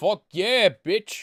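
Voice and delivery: put-on full-volume bellow in a Brooklyn accent. A voice answers a call for Shazam, in a Brooklyn accent. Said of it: "what's with the Brooklyn accent on this one?".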